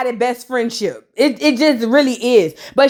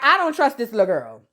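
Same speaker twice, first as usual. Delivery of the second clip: ordinary talk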